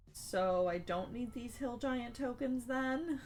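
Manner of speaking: put-on sad small voice. Retelling Brandis's reaction when the group avoids the hill giants, little sad voice. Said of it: "in kind of this little sad voice".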